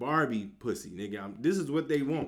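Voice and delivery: plain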